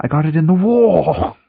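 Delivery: sudden fake British accent. Answering why a character suddenly got a British accent: put-on British accent. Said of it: "Why did he get a British accent all of a sudden?".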